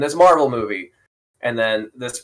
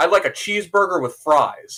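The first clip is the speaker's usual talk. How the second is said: non-native put-on American accent, pitched up; 5 semitones higher than usual. Describing how people from other countries do American accents: imitating a foreigner's American accent. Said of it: "accents do American accents".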